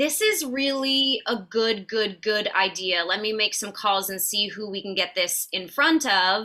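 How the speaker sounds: ordinary delivery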